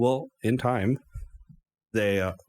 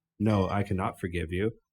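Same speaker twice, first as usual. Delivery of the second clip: ordinary talk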